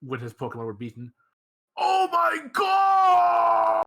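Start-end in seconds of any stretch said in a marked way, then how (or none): 1.8-3.8 put-on funny yell. Retelling how a beaten trainer in a Pokemon movie yelled: imitating a funny yell. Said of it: "he yelled in a really funny way".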